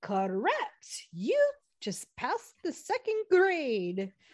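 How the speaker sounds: put-on high, sing-song old schoolteacher lady voice. Retelling what a teacher said to a student, in an old lady voice. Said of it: "in her like old lady".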